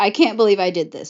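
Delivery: ordinary talk, nothing marked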